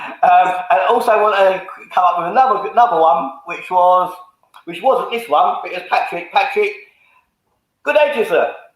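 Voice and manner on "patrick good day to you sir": clumsy, bad put-on Irish accent. Speaker greets someone in a bad irish accent. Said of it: "that was my best Irish accent".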